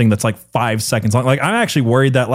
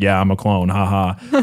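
slow, put-on, tongue-in-cheek, jokey sarcasm; 4 semitones lower than usual. Imitating Megan Fox joking about a clone rumour: imitating Megan Fox being sarcastic.

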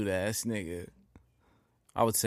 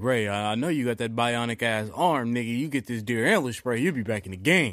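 ordinary talk, nothing marked

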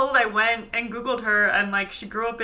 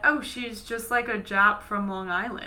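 ordinary talk

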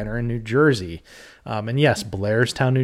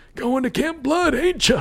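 put-on very high-pitched drunk old man voice. Recapping a film and quoting the town drunk: Crazy Ralph voice. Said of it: "Nobody can do a good Crazy Ralph voice".

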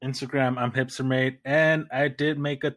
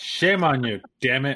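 ordinary talk

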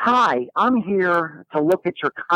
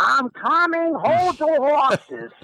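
put-on shouted Chicago accent, pitched up; 11 semitones higher than usual. Retelling a woman shouting before opening the door, imitating a Chicago accent yell. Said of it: "with that Chicago accent that she had".

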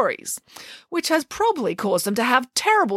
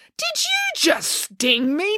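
high, insistent, in disbelief; 5 semitones higher than usual. Frida, just stung by the scorpion on her back, asks it, demanding. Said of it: "demanded Frida".

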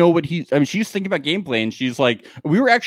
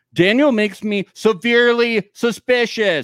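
heavy emphasis on every word, like capital letters; 6 semitones higher than usual. Telling listeners how to take their suspicious remarks, fully emphatic as if in capital letters. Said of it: "bolded and in capital letters".

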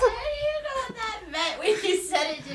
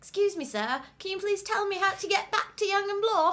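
fake, put-on British accent. Retelling asking a man for directions in Toronto, in a fake British accent. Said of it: "I put on a fake British accent".

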